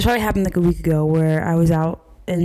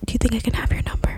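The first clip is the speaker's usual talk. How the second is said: imitated male whisper, much quieter; 5 semitones higher, 3 dB quieter than usual. Retelling what a man said to them, imitating his whisper. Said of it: "my guy was whispering".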